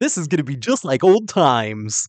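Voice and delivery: mumbled, hard-to-follow character voice. Recapping a movie's plot, doing a Ted impression. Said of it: "Was that a good Ted impression?".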